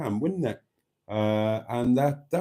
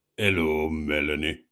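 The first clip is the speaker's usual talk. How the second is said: very low, deep, husky man's voice; 8 semitones lower than usual. Reading out Richard's greeting to Melanie, in Richard's deep husky voice. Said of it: "he says in a deep, husky voice".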